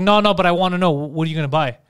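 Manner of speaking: normal talking voice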